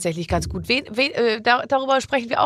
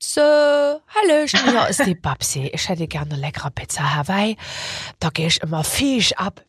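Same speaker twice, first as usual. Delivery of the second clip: put-on Saxon dialect voice; 3 semitones lower than usual. Ordering a pizza as a made-up caller, in a Saxon accent. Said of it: "jetzt ich bestelle eine Pizza auf Sächsisch".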